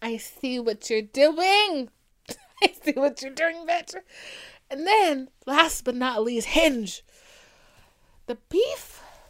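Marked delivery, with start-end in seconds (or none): 6.5-9.0 voice cracking and breaking mid-word. Listing dating apps for listeners, the speaker's voice cracks. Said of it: "My voice just cracked real quick".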